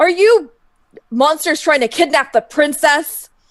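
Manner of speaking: very loud, high-pitched shouting. Game master voicing a group of guards descending on the players, guards yelling. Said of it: "descends upon you and yells".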